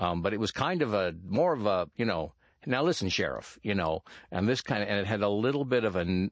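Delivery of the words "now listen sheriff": slightly nasal put-on voice, higher. Showing how the role's voice differed from the real one: Cooper voice, slightly nasal. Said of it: "almost a nasal quality to it".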